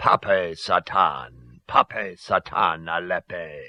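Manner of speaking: very slow, low, guttural clucking voice. Reading the narration, voice Plutus's opening cry in a guttural, clucking voice. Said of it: "Plutus began in a guttural, clucking voice".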